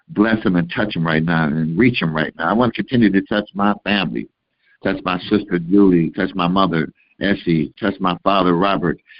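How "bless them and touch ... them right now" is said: ordinary delivery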